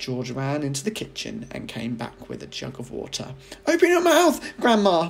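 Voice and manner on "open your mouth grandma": shrill, very high, loud crying out. A boy brings a jug of water to his burning grandmother, crying out. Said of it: "he cried".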